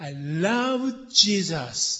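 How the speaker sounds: love stressed hard, carrying the weight. Explaining English sentence stress in Japanese, stress on love. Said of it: "love を強調するはずなので、I は一つ飾りみたいな感じですね。".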